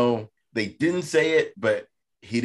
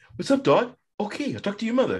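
voice pitched very high; 10 semitones higher than usual. Quoting a sketch after a question about a voice: Mark Wahlberg impression. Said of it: "You've never seen that S N L?".

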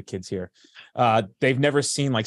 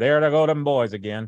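put-on good ol' boy Southern accent throughout. Teasing the other speaker about their voice, doing a Dukes of Hazzard guy impression. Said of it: "you sound like the fucking guy from the Dukes of Hazzard".

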